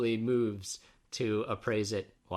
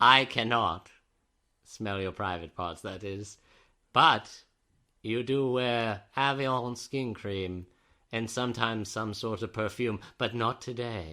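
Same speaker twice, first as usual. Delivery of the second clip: smug, mannered, condescending, superior and judgmental voice. In a comedy sketch, Hannibal answers Clarice in the asylum, in a Hannibal Lecter voice. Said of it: "He tisks his tongue at her judgmentally".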